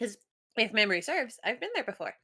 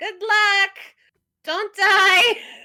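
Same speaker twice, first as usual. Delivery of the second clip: very loud, shrill, high-pitched shout; 10 semitones higher, 8 dB louder than usual. As the group walks away through the slums, a player calls after them: yelling after them. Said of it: "just kind of yell".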